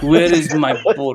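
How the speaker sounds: put-on, fake Russian accent. Joking in a group, asking for a bird, in a mock Russian accent. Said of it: "That's Russian".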